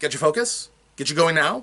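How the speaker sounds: quick, energized, driving, high-energy delivery. Demonstrating pacing as a tool, this part fast, high energy. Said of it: "Fast, put a lot of energy".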